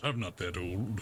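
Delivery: muttering under breath. Voicing a character reacting to being called grandpa: muttering under his breath. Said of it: "Under his breath, he says".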